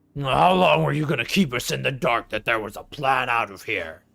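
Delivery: rough-edged, gruff brute growl. A game master voices a bugbear striding over to the party, gruff bugbear voice. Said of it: "Says in a gruff, common voice".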